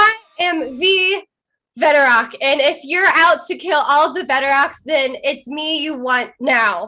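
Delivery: shouting, yelling. In character, challenging a dragon that hunts the Veteroks: yelling at a dragon. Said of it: "I am going to yell at this dragon".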